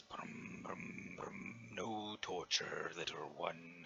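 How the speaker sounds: put-on giant voice, slow, plodding and drawn-out. Voicing a giant who praises the spirited adventurer: giant voice. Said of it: "And then the giant goes".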